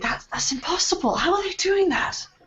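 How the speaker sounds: high, hushed, sort of half whisper. Leaning out of a window watching marching troops, half whispering. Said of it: "I'm sort of half sort of whispering".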